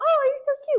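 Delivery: speaking up very high. Teaching a group to use head voice, showing how: high head voice. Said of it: "So speak up high".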